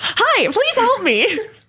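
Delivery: tearful, high, sing-song customer-service retail voice. Talking about working retail, the speaker shows the greeting in a tearful retail voice. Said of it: "you can say it in that voice, and it still sounds tearful".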